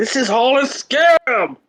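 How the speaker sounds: very high, very slow, theatrical exasperated cry. Throwing the phone down in frustration in character: frustrated dramatic outburst. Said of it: "I can't be louder than that".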